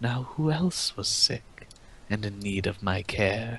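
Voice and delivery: soft half-whisper, close to the ear. Narrating to a listener, a voice comes close behind them: half-whispering in ear. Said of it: "a voice whisper in your ear".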